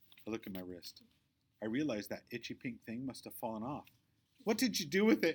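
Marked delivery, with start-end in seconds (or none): 4.4-5.4 very high, loud, sharp, cutting snap. Reading a story aloud, a girl demands where her bracelet went: snapping. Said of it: "Victoria snaps".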